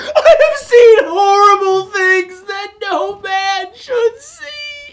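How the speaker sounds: high, loud panicking wail, freaking out.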